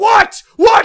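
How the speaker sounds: put-on livid screaming. Recounting a confrontation with a roommate, retelling screaming at him. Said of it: "I'm like screaming at him".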